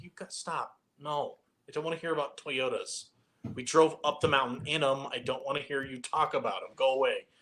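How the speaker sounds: mock sarcastic, fed-up, dismissive complaining tone. Retelling how the wives told them to leave the fire: imitating a sarcastic complaint. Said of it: "more sarcastic than it was anything else".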